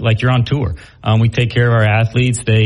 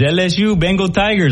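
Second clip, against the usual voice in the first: put-on high-pitched Scottish English accent; 8 semitones higher than usual. Retelling what a man in a golf pro shop said: scottish english accent. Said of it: "in his Scottish English accent says".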